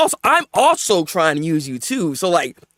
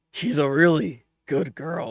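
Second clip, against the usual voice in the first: put-on leering, soft, creepy old man voice; 3 semitones lower, 6 dB quieter than usual. Acting out a man's words, imitating a creepy old man. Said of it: "you sound like an old creepy man".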